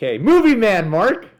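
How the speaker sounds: high, loud, slow, enthusiastic, drawn-out callout. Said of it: "just the name".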